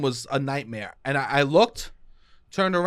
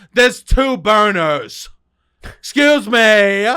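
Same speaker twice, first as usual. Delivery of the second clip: very loud, slow, insistent, drawn-out shout; 3 semitones higher, 11 dB louder than usual. Retelling a woman yelling to get to the omelets: imitating someone yelling. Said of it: "literally just kept yelling".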